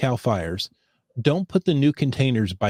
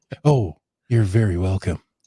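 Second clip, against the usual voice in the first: public radio announcer voice, lower pitch; 5 semitones lower than usual. Replying to a co-host's thanks on the show; NPR voice. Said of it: "I've somehow broke into my N P R voice".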